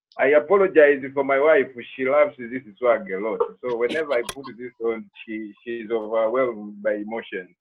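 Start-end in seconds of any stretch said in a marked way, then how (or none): none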